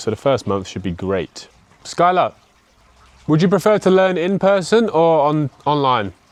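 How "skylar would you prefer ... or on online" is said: very high-pitched, loud shout. Speaker directs a question to Skylar, shouting. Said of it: "Sorry, I'm shouting here".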